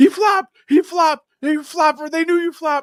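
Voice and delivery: very high, loud screaming. Retelling a mic'd-up player yelling at the ref: imitating Roquan Smith screaming. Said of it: "screaming at the ref".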